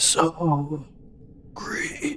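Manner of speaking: raspy man's voice, "so" drawn out. Game master voices a man the players suddenly hear, rasping man's voice. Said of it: "a rasping voice from a man say".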